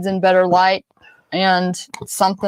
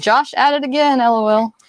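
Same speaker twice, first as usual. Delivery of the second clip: ordinary talk, nothing marked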